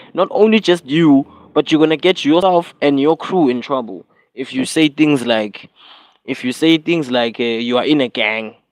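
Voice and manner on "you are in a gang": ordinary delivery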